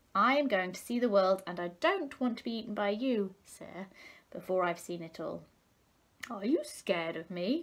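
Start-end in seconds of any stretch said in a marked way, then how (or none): 6.3-7.7 jeering, mocking, taunting tone. Narrator reading a fable, a crab questioning a small fish: mocking voice. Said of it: "Asked the crab in a mocking voice".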